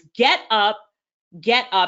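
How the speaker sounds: voice dropped deep. Retelling how he urged you on after your relationship, repeat his words in a deep Les Brown voice. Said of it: "in that deep Les Brown voice".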